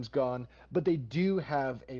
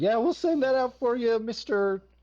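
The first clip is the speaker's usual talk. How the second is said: put-on distressed teenager voice, higher and louder; 10 semitones higher, 6 dB louder than usual. Voicing a teen at a desk who seems really upset: upset teen voice. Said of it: "this teen who seems really upset".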